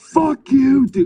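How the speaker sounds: mock very high, drunk screaming outburst. Retelling yelling at friends who wanted to leave, retelling a scream. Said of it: "I'm screaming".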